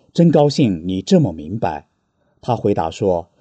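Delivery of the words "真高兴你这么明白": ordinary talk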